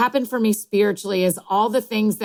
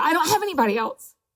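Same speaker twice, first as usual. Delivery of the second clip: near tears, tearful, higher-pitched voice; 7 semitones higher than usual. Speaking to Annie, about to cry. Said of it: "I'm going to cry saying this too".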